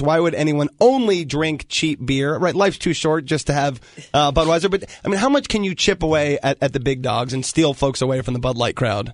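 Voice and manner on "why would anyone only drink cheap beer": normal talking voice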